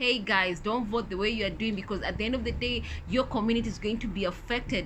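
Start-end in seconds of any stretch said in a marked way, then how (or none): none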